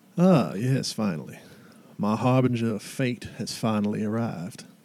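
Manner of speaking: put-on Southern American accent, slow and welcoming. Voicing a stranger who smiles coyly at Marina in the game, southern accent. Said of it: "I know that southern accent is wonderful".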